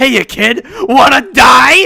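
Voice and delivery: very high, very loud, shrill, drawn-out put-on voice. Quoting a line the way he says it, imitating a character's voice. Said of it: "I've got to do his voice a little justice right here".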